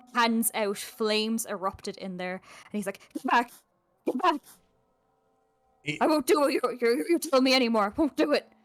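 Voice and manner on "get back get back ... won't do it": panting, out of breath, higher and louder. Voicing a frightened man in a doorway, gasping for breath. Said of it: "gasping for breath".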